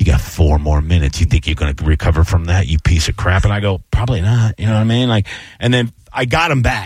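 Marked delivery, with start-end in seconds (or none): 0.0-3.4 evil voice, much lower. Speaker recalling a bad opening, voicing what's in his head: evil inner voice. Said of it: "my evil voice goes".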